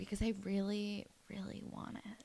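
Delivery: put-on breathy whisper. Retelling a scene of a character flirting with Drew: imitating a breathy whisper. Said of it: "does a weird whisper thing and says".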